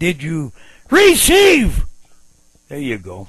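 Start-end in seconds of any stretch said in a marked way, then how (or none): 0.0-1.8 high, booming, forceful, hard-hitting preacher-style yell. Showing a shout that lands: forceful shout. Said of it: "That one hit".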